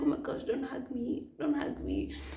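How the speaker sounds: put-on crying voice. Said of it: "So I'm crying".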